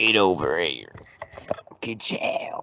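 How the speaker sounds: put-on thick, heavy rural Southern US accent. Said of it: "a heavy redneck voice".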